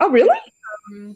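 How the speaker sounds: genuinely surprised, taken-aback tone. Hearing that explaining it to their parents went really well, sounding surprised. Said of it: "you know why i sound surprised".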